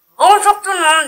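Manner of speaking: loud, very high voice, spoken with mouth full. Host greets viewers at the start of a video, talking with mouth full. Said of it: "j'avais la bouche pleine".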